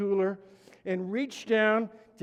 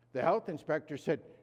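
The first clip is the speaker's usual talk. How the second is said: ordinary delivery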